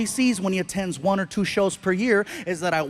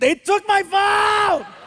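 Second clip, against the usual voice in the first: mock very high, drawn-out, stretched holler; 12 semitones higher, 5 dB louder than usual. Retelling how Frankie yelled at the ground after losing his phone: imitating his son yelling. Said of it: "he yells at the ground and he goes".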